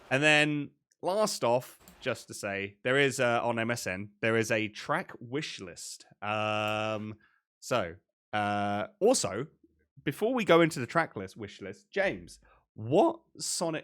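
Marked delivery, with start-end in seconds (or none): 12.7-13.8 voice breaking, higher. Asking the co-host which game he wants, voice cracking. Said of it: "my voice broke there again".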